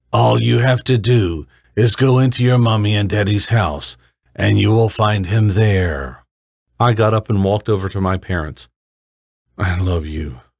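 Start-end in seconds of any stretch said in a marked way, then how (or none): 9.6-10.3 softly mouthed, barely voiced, much lower and slower. A narrator voices a character walking over to both parents, softly mouthed. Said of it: "I softly mouthed to both of them".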